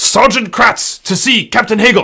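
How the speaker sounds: rough soldier-style voice. Game master voicing an armored man announcing himself at a door, gruff Sergeant Kratz voice.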